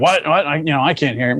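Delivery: mock hard-of-hearing father voice. Retelling how the speaker's father couldn't hear during a ranger's talk, imitating hard-of-hearing dad. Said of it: "I always do that impersonation of him".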